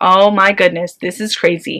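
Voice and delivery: ordinary talk, nothing marked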